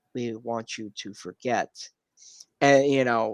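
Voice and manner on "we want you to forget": gentle, soft, low, calm alien voice. Retelling a scene where an alien disguised as a human speaks, soft alien voice. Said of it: "in a soft voice".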